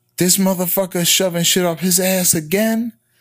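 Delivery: mock woman's yell, high-pitched, toned down. Retelling a woman asking the doctor about the patient: imitating a woman yelling. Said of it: "You can't yell his medical history out".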